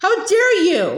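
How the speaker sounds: furious, outraged, angry exclaiming. Reading fiction aloud, a running character's outburst: shouting angrily. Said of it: "the figure shouted as she ran".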